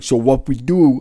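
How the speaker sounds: slow, put-on, full New York accent. Imitating a retired NYPD guest's stories: put-on New York accent. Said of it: "The proper New York accents".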